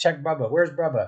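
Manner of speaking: put-on babyish toddler voice, baby talk. Retelling what a toddler asked about his sick brother: imitating toddler baby talk. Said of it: "in his little baby talk".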